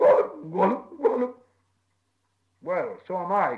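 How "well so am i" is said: crying out, called out. Bilbo answers Gollum, who has just said he is lost; crying out. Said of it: "cried Bilbo".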